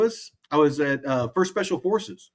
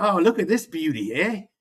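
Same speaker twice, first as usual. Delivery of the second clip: put-on Australian accent, down-under style; 3 semitones higher than usual. Recalling famous people who died, quoting the guy down under: Steve Irwin impression. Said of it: "who is the guy down under? He's like".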